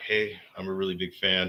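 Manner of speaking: ordinary talk, nothing marked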